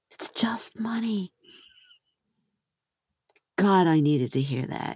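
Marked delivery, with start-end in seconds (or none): 0.2-1.3 put-on near-whisper, higher and quieter. Retelling what a woman said after class: imitating someone almost whispering. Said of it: "almost whispers in my ear".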